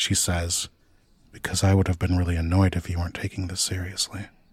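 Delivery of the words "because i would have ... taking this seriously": quiet, hushed aside. Voicing a character who speaks only loud enough for one listener: speaking quietly. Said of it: "she kind of says quietly".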